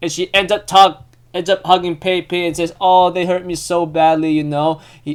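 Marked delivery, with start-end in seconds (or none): none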